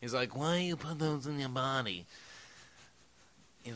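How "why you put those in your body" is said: soft, needling, chiding tone. Retelling how Marlon Brando scolded someone about smoking: Marlon Brando impression. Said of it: "the best Marlon Brando impression ever".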